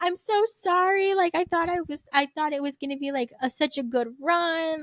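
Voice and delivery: mock sobbing voice. Retelling Mom apologizing during a rainy run, imitating Mom sobbing. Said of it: "And she's like sobbing".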